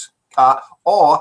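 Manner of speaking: plain reading voice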